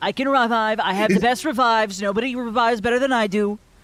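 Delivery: loud boastful politician voice. Playing Trump as someone who raises the dead, in kind of a Trump voice. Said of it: "that did kind of sound like Trump".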